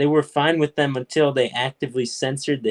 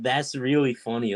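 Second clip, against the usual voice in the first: plain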